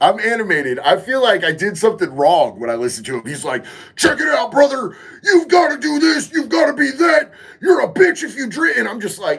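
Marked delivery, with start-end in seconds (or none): 3.9-8.8 very high, angry, in-your-face yelling. Retelling how Wes Watson talks, imitating Wes Watson yelling. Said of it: "I feel like he's yelling directly at me".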